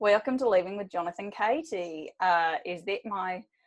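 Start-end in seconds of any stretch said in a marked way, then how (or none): 0.0-2.1 put-on Australian accent. Welcoming listeners to the show, slipping into an australian accent. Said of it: "I cannot stop doing a fucking Australian accent".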